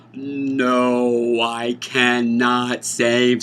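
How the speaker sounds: very slow slow-motion delivery, "no" stretched long. Repeating a refusal for emphasis, in slow-motion delivery. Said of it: "Let me do it in slow motion".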